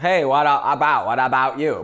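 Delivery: "about" said in a put-on American accent. Recalling a dialogue teacher's lesson, the speaker demonstrates an American accent on 'about'. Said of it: "like Americans say about".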